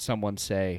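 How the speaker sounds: ordinary delivery, nothing marked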